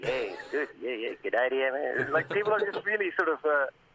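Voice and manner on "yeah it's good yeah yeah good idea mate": put-on Australian accent. Imitating how people talk here: australian accent. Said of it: "your Australian accent is far superior to mine".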